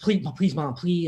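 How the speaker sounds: earnest, begging, pleading voice. Retelling begging his mom not to call the parents: imitating own past pleading. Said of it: "I'm pleading".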